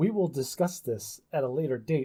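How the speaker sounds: gentle, even, calm and soothing voice. Imagining how a parent spoke to their child after first aid: mock calm, soothing voice. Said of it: "in a very calm and soothing voice said".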